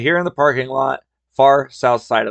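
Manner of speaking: ordinary delivery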